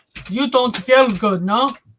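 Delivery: put-on Bosnian-accented speech. Retelling what a man from Bosnia asked him, imitating a Bosniak accent. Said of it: "he says in his Bosniak accent".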